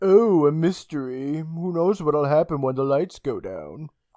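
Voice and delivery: odd, eerie, creepy, spooky put-on voice. Recapping a scene where Jam touches a woman's shoulders: Jam's weird voice. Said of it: "he says in a weird voice".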